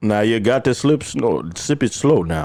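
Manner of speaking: put-on voice of a sixty-year-old man. Doing a voice from an ad about drinks at McDonald's: Morgan Freeman voice. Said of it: "Sounds like sixty-year-old Morgan Freeman".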